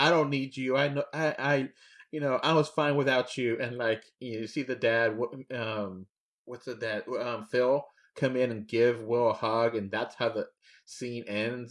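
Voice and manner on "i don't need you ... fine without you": mock intense heated outburst, screamed. Retelling a scene where a son screams at his dad: retelling Will Smith screaming. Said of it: "screaming at him".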